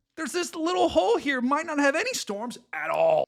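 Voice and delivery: voice suddenly shooting up to high pitch. A weather forecaster describing storm chances on the map: voice suddenly goes high. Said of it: "Why did my voice get so high there?".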